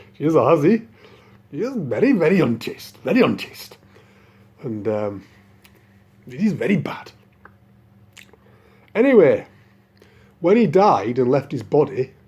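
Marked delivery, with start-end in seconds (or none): 0.2-7.1 put-on Indian accent. Retelling a Brahmin condemning a woman as a hussy: Indian accent. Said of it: "in Indian accent".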